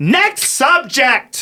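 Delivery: very high, shrill, swooping screaming, acted out. Speaker recounts a woman yelling at his set at the Comedy Store, imitating a woman screaming. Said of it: "She was screaming at me".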